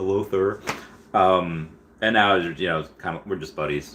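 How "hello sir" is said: mock nervous delivery. Retelling the first time talking to an admired person: imitating own nervous greeting. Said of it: "I was, like, nervous".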